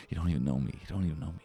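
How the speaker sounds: very quiet, hushed half-whisper under the breath. Acting out walking into the house while the crowd boos: half-whispering to oneself. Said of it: "you see me whispering to myself".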